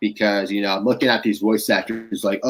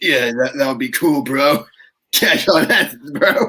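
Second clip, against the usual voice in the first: put-on higher-pitched stoner California surfer dude voice; 5 semitones higher, 3 dB louder than usual. Trying out a voice idea for dubbing: stoner California surfer voice. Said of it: "stoner California surfer type voice".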